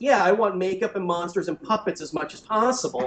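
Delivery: ordinary talk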